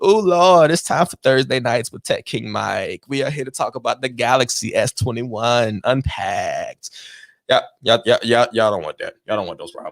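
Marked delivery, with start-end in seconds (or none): 0.0-6.9 real thick, slow, heavy, drawn-out put-on drawl. A streamer shows how he would open his stream talking like her: real drawl. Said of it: "I'm gonna start talking like that in the streams".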